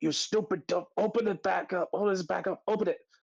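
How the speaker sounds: very high, frantic, desperate yell. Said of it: "he's like".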